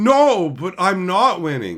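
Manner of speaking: put-on innocent tone, swooping sing-song. Mocking a player who denies winning at Commander: imitating a player's fake denial. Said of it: "it's just a bunch of empty lies".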